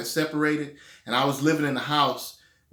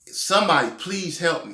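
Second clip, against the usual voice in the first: imitated begging, pleading tone; 3 semitones higher than usual. Retelling crawling hurt with nobody around: retelling own begging for help. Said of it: "begging, like, for help".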